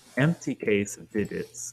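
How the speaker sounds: usual speaking voice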